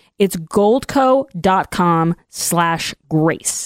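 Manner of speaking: very slow delivery. Host reads the sponsor's website address for listeners, really slow. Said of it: "so I'm going to say this really slow".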